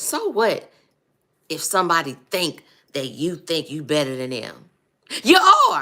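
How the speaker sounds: forceful, aggressive, swooping, fatherly preacher-like tone. Retelling what a preacher father taught, imitating aggressive father. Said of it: "my daddy was a very aggressive man".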